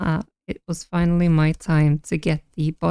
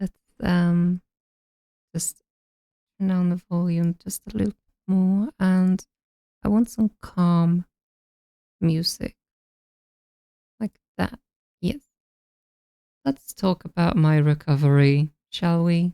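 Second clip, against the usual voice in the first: very tired, exhausted voice. Chatting on a short stream while sounding very tired. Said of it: "I'm sorry if I'm sounding tired".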